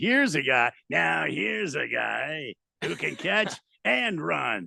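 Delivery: slow drawl with a growl. Showing how the line would sound: Chris Collinsworth impression. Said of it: "done the Collinsworth".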